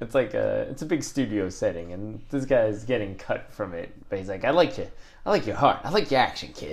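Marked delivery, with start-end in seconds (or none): 4.4-6.7 put-on New York mobster accent. Imagining a studio scene, praising a guy being cut, in a new york mobster accent. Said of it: "using like the New York mobster accent".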